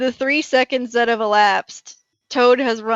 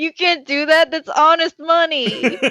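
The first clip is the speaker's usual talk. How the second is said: hurt, wounded voice with genuine pain; 4 semitones higher than usual. Answering the other speaker's joke about kicking them off, mock-pained voice. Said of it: "you had some like genuine pain in your voice".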